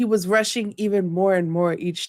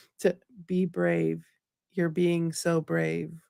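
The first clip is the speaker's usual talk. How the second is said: soft, flat, tired, low-key monotone; 2 semitones lower, 5 dB quieter than usual. Show a listener how Tom Hiddleston delivered the line, in Loki's tired monotone voice. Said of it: "you don't even know monotone voice".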